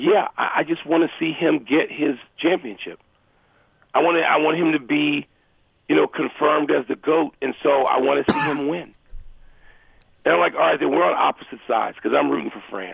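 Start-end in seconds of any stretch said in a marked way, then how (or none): none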